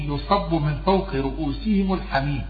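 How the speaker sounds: ordinary talk, nothing marked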